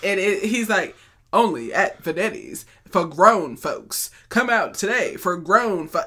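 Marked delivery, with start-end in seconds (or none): 1.3-6.0 slow radio commercial announcer voice. Imitating the guy from a local radio commercial: radio commercial voice. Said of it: "He has this voice".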